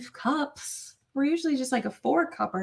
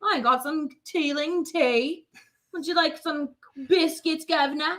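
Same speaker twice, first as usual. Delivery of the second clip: put-on fake English accent; 3 semitones higher than usual. Greeting an Australian viewer: mock English accent. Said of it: "I went English".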